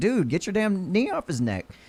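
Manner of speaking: high, swooping scream. Retelling what bystanders screamed at the man on the neck: imitating people screaming. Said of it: "they're sitting there screaming at this dude".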